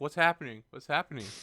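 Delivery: very loud, high, excitable cat chatter voice. Watching a friend's cat on camera, voicing an excited cat. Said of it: "She looks excited".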